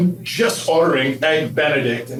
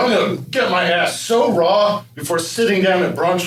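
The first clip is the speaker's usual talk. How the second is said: ordinary delivery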